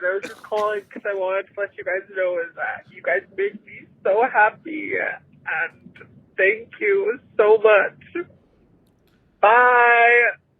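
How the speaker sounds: speaking through tears. A longtime listener calls the hosts to thank them, crying. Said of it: "Right now I'm just crying a lot".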